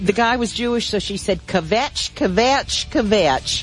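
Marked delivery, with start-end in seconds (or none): 1.5-3.6 put-on kvetch said in a Southern US accent. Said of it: "in her southern accent".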